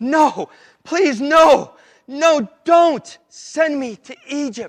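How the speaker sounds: acted desperate pleading, very high and very slow. Retelling the story of Joseph, acting out Joseph pleading with them. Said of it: "He's begging them, he's pleading".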